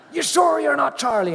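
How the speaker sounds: very high, loud shout. Retelling his morning ritual when she mistook him for Charlie, imitating Debbie Reynolds shouting. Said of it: "she'd be shouting at me every morning".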